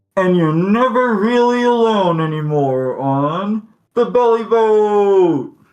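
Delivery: muffled, high-pitched voice. Narrating a scene after she leaves the ship, voicing another speaker: muffled voice. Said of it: "hear a muffled voice say".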